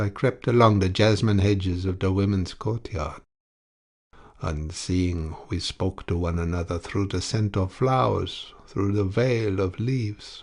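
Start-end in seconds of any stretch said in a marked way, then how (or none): none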